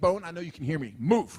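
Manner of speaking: ordinary delivery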